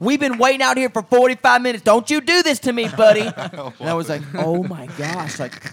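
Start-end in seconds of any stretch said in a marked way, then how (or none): 0.0-3.2 put-on very high, very loud, angry, furious scream. Retelling how a woman started cussing and screaming at the speaker, imitating her screaming. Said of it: "she started cussing at me and screaming".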